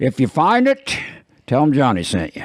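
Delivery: folksy put-on old man voice. Telling others where to find an ice cream place: put-on old guy voice. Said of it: "I thought I did doing an old guy".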